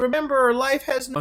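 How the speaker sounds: high-pitched shout.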